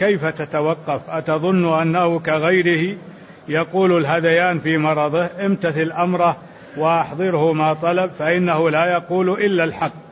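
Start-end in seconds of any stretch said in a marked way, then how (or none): none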